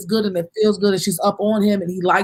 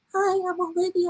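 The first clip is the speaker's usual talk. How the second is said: put-on very high sugary girlish voice; 10 semitones higher, 7 dB quieter than usual. Retelling how a reality show contestant acted: imitating Olivia as a sweet girl. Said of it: "the real sweet girl".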